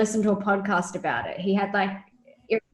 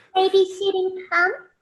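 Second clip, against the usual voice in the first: put-on anime girl voice, higher pitch; 11 semitones higher, 4 dB louder than usual. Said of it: "I hate the anime girl voice that you do".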